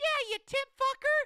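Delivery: squeaky, super high-pitched voice. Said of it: "has the highest pitch voice ever".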